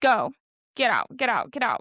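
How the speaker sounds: acted panicked voice. Retelling telling everybody at the restaurant to leave: imitating own panicked self. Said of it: "now I'm freaking out".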